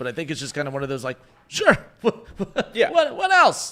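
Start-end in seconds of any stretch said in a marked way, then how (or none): 1.5-3.7 amused, laughing while talking, higher and louder. Reacting to a pitcher leaving the game: amused tone. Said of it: "enjoyable tone in my voice right now".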